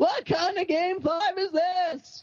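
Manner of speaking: very high, shrill screaming outburst. Try out your impression against the other person's, as Seinfeld screaming about game fives. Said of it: "Seinfeld screaming about game fives".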